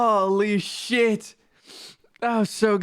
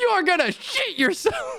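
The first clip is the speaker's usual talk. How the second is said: intense delivery; 10 semitones higher than usual. Quoting how he says the line: imitating an intense delivery. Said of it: "the intensity with how he says it".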